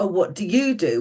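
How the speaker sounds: plummy, very posh upper-class lady's voice. Retelling what a lady at a big posh table asked, in a very posh voice. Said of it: "in a very posh voice".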